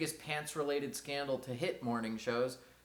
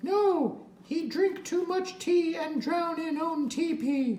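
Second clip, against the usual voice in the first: shrill, very high, loud ventriloquist-dummy voice; 8 dB louder than usual. A ventriloquist's puppet answers the performer's question in a puppet character voice. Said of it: "you're the one doing my voice".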